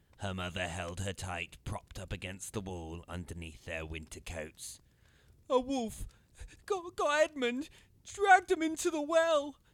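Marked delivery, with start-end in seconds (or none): 5.5-9.5 breathless gasping, very high and very loud. A girl, held tight by her mother, tells what happened: gulping for air. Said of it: "gulping down air".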